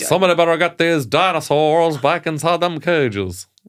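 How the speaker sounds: mock American movie accent. Just told they got the part in Jurassic Park 7, American accent. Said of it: "can you do an American accent?".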